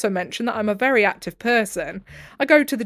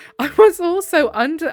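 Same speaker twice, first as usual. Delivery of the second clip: laughing through words, high and loud; 7 semitones higher, 5 dB louder than usual. Complaining about a partner's household habits, laughing. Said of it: "I'm laughing just because this is so ridiculous".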